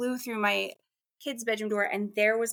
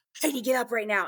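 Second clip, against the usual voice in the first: put-on scary, raspy voice. Retelling being woken by a voice right in the ear: imitating a scary raspy voice. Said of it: "scary sounding".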